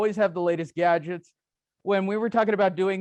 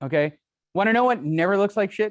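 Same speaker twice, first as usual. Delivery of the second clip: plain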